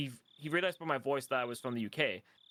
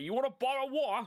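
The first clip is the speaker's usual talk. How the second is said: very high fake southern British accent; 11 semitones higher than usual. Showing the stereotypical way people down south in the UK talk: stereotypical southern British accent. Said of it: "the stereotypical fucking fake British thing".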